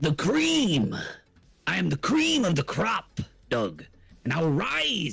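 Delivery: slow, swooping, every word stretched, pitch swinging. Answering an introduction with a wrestling intro: Macho Man wrestling intro voice. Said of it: "I've been practicing my Macho Man intros".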